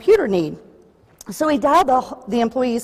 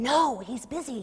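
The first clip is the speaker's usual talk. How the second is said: small, hushed half-whisper, barely audible; 11 dB quieter than usual. Narrator reads a small voice on the phone answering a caller, small half-whispered voice. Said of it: "the small voice whispered".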